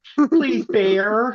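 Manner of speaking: earnest, high pleading with drawn-out no. Retelling a woman in a video facing a bear, imitating her pleading. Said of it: "Just pleading with the bear".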